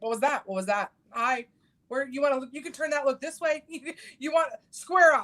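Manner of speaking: mock hard grilling tone. Retelling how she grills her husband over her kids: acting out interrogating her husband. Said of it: "question my husband like the Spanish Inquisition".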